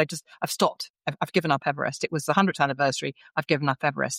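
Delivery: ordinary talk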